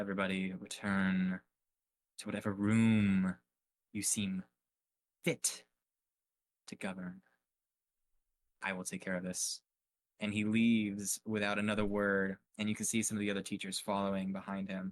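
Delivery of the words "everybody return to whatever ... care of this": put-on strict teacher voice. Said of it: "my best, like, Snape impression".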